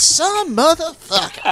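very high-pitched put-on voice. Joking about a friend's line in a Samuel L. Jackson voice. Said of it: "in a Samuel L. Jackson voice".

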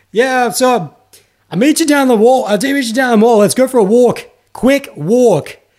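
put-on yelling. Speaker reenacting pretending to be on a phone call, retelling own yell. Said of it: "I have like my phone up and I'm yelling".

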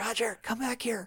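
high, hushed, library-quiet, half-whispered stage whisper. Describing Joe Piscopo chasing someone through a library, acting out his half-whispering. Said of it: "He's whispering".

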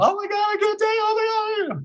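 very high, frantic helium squeak. Describing her old voice before tapering medicine, mimicking her high-pitched frantic helium voice. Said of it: "like high pitched frantic".

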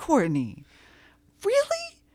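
very high, loud, sing-song, swooping exclamation. Retelling a friend throwing off the headphones: imitating Vanessa. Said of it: "that is exactly what she sounds like".

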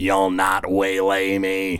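slow mechanical voice. Voicing the armored figure that holds out its sword at you, mechanical voice. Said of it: "in a mechanical voice says".

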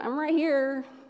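put-on breezy, easygoing Valley Girl voice. Retelling a prayer and the answer heard: Valley Girl Jesus voice. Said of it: "my Jesus voice in my head is kind of Valley Girl".

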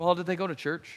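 very low, soft, offhand, calm, nonchalant tone. Acting out someone asking about a person who passed away, imitating a nonchalant tone. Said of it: "just as nonchalant".

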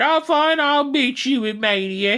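put-on slow, high, botched Australian accent, barely there, drawled. Recapping a storyline, speaker acts out Rhea's reply: failed Rhea Australian accent. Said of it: "You were not doing an Australian accent at all".

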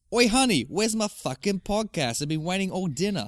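put-on Boston or New York accent. A speaker improvises a bit with a partner, in a Boston New York accent. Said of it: "Boston, Boston, New York, New York".

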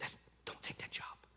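fast, whispered gentle tone. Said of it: "the Holy Spirit's trying to whisper in our heart".

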